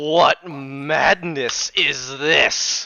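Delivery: deeply hateful voice dripping with loathing. A narrator voices a figure from the darkness turning to look at you: deeply hateful voice. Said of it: "in this deeply hateful voice".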